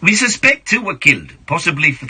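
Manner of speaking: put-on steady South African accent. Reading a news story, quoting the Sibuya owner: Nick Fox in South African accent. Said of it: "Consistent South African accent".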